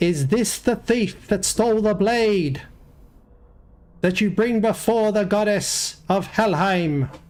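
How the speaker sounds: high, crying-out voice. Game master voicing the death goddess possessing the Droga, crying out. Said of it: "you hear the voice cry out".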